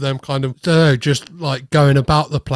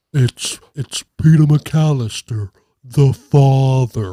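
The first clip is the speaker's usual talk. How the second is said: slowed-down voice-changer impression, every word dragged slowly; 3 dB louder than usual. Explaining how someone sounded on the phone, doing Kevin McAllister's slowed-down Talk Boy voice. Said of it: "that slowed down voice that Kevin McAllister does on his Talk Boy".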